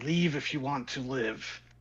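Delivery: rough, gruff voice, audibly a bit confused. Narrating a game, someone staring the player down at a junkyard speaks: gruff voice. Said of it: "in this gruff voice".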